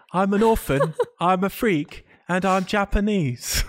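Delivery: put-on small, high-pitched British boy accent. Recapping a show, voicing the doll's lines: little British boy accent. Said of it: "With his little British boy accent".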